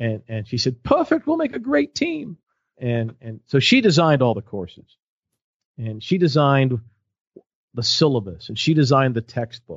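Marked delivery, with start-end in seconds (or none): 0.8-2.4 put-on British accent, very high pitch. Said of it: "she even had the British accent going".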